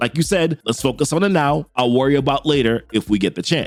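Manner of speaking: normal talking voice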